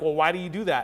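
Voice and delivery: judgmental, critical, disapproving, accusing tone. Showing how not to ask someone why they do things: judgmental questioning tone. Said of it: "not like a judgmental, like".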